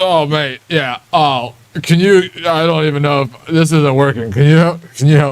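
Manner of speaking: put-on acting drunk. Out in the rain, a character asks a stranger for help, pretending to be drunk. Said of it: "pretend to be drunk as hell".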